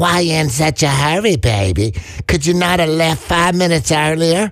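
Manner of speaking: taunting put-on voice. Doing a voice to mock a remark about hurrying, mocking put-on voice. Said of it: "let me just do that voice".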